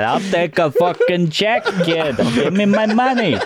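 very slow, drawn-out, high put-on Russian accent. Retelling what she said when demanding a check: put-on Russian accent. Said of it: "You sound Russian".

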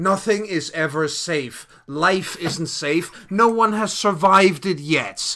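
loud, contemptuous, scornful villain sneer. Voicing the red cap answering the troll's warning that it's not safe, sneering. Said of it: "the red cap just sneers and goes".

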